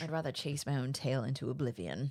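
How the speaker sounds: put-on low, menacing, scheming, theatrical cat voice, British accent. Voicing a scheming cat in a script reading: menacing cat with British accent. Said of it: "a menacing, scheming cat with a British accent and a flair for drama".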